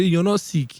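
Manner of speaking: dismissive, shutting-down tone, high and loud.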